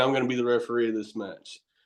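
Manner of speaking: ordinary talk, nothing marked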